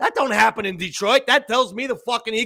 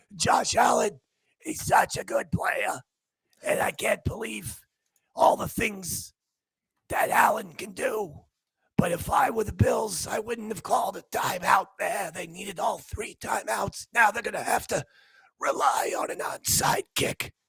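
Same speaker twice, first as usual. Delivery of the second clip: hoarse, raspy whisper, voice giving out; 7 dB quieter than usual. Retelling a man whose voice gave out, whispering like Babe Ruth. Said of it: "he was trying to whisper like he was Babe Ruth".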